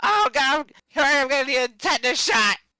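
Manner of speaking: high, panicked, stammering, tripping over words, voice cracking. Imitating a player's panicked reaction to a rusty weapon: imitating panicking. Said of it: "Are you just, like, panicking?".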